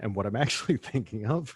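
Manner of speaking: speech breaking up into laughter. Starting a story about their mother's funeral; laughing while talking. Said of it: "sorry, I'm already laughing".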